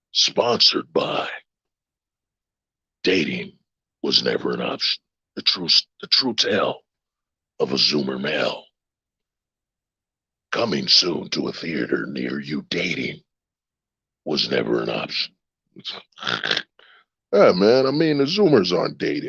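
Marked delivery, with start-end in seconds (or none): 0.1-15.3 deep film-trailer announcer voiceover voice. Talking about Zoomers and dating, speaker switches to a movie trailer voice. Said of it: "Let me use my movie voice".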